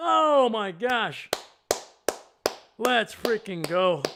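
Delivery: very loud, excited yell with voice cracking. Cheering a touchdown pass after a long wait, excited yelling with voice cracking. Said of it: "My voice is cracking because I have not yelled in forever".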